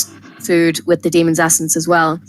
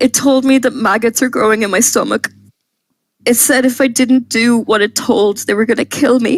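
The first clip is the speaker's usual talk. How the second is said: high, tearful, sobbing crying speech; 4 semitones higher than usual. A man describes what happened in his kitchen, crying while talking. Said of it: "he starts crying".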